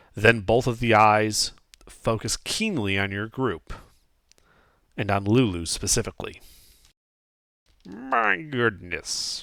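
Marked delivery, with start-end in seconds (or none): 7.9-9.4 rough, rasping, croaking hag voice. Game master voicing a hag eyeing the group, croaking hag voice. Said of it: "the hag croaks".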